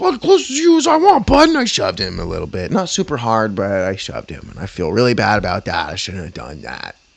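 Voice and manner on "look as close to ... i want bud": shrill, loud, very high confrontational shout. Retelling an argument with an old man, retelling own yelling in an argument. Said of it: "just arguing and yelling".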